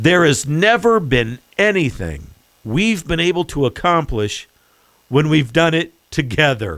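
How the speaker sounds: slow, unhurried, careful, deliberate reading. Rereading a quoted sentence for a listener, as a slow reading. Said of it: "Let me read it slowly for you".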